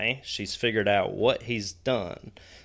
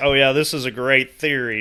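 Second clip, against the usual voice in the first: play-acted, booming, very loud, eager, enthusiastic praise; 4 semitones higher, 8 dB louder than usual. Complaining about getting nothing, imitating the other speaker's praise. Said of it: "and you're like".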